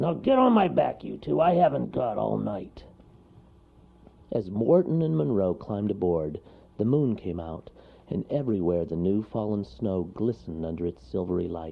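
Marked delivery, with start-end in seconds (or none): 0.0-2.8 rough, rasping, gruff, growling bear voice. Narrator reads the bear telling Wharton and Monroe to climb on, as a growling bear. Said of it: "the bear growled".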